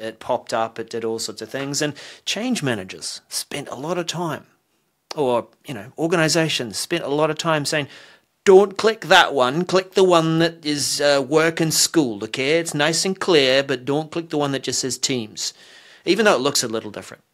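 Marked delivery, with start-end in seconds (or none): 8.4-15.5 put-on British regional accent voice. Quoting organizations telling users which app not to click: imitating a UK regional accent. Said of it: "They said it in that accent too".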